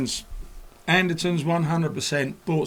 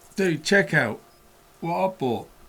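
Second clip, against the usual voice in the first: plain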